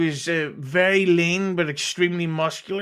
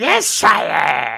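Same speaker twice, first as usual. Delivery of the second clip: loud, rough, scratchy, creaky put-on cartoon voice; 3 semitones lower, 6 dB louder than usual. Imitating a goblin character compared to Starscream: Starscream voice. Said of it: "Starscream from Transformers".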